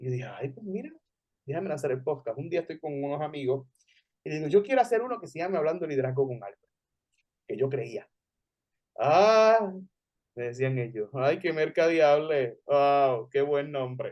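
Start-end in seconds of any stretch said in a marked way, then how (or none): 11.1-14.1 slow, derisive, teasing sarcastic tone. Retelling how friends reacted to the podcast name, imitating their sarcastic mockery. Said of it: "Muy sarcásticamente, en tono de burla".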